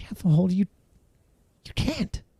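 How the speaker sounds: high, hushed, pleading voice.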